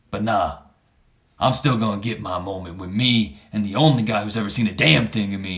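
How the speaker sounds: deliberately rough, bad wrestler promo voice. Retelling a wrestling segment, doing a bad Booker T impersonation. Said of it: "That was a pretty bad Booker T impersonation".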